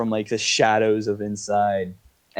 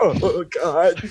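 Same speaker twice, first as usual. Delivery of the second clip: pitched-up words forced out while gagging; 7 semitones higher than usual. Game narrator voicing wood elves who all react, gagging while speaking. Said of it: "and they all just gag".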